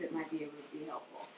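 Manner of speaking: very quiet, hushed, clear, quick talk. Explaining how to talk to an aggressive individual, demonstrating lower volume, clear tone. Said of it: "if you just talk like this".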